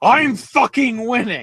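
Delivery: very high-pitched shouting. Retell a wrestler's answer to the crowd booing him, imitating Zack Sabre Jr. shouting. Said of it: "he just shouts at them".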